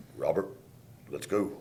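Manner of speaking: deep, breathy, hushed, stern voice. Recalling how Mo called him by his full name when in trouble: Mo's deep voice. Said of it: "He'd get that deep voice".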